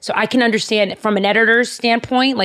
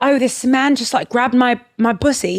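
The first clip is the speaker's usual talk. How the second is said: put-on British woman's accent; 2 semitones higher than usual. Retelling what a girlfriend said on a trip: put-on British accent. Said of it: "I cannot believe your British accent".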